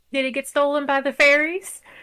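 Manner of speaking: light, teasing joking tone. Playing a character who sits down to join a conversation with an old man: jokingly. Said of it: "kind of jokingly".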